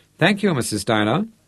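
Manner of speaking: friendly, cordial but detached, indifferent tone. A man thanks the woman who greeted him on the steps, friendly but disinterested. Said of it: "Rod kept his voice friendly but disinterested".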